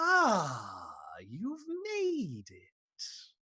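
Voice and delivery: very slow, swooping skull voice, drawn-out "ah". Voicing a flaming skull on a throne greeting a player: voice of a skull on a throne. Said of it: "a voice, uh, emanates from the throne and says".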